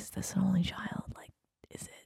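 soft, unvoiced whisper under the breath.

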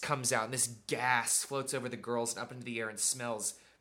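ordinary delivery

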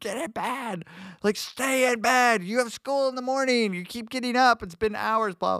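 screaming, high-pitched. Retelling a mom screaming at a child to stay in bed: imitating mom screaming. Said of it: "screaming at him".

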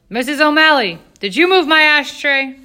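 very loud, high-pitched yell. Father calls out to the housekeeper from his chair, yelling.

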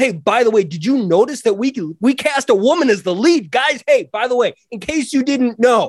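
high, mock, self-congratulating announcer voice. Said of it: "we didn't need to be like".

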